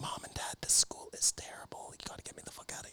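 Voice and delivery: put-on whisper. Retelling a kid phoning his parents from school: imitating a whisper. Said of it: "he's whispering on the phone".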